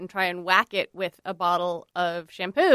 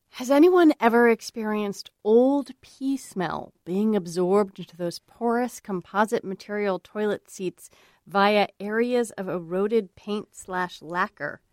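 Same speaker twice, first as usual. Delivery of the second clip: put-on mournful, lamenting tone. Reading a listener's lament aloud: put-on lamenting tone. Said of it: "I'm gonna do, like, a lamenty tone".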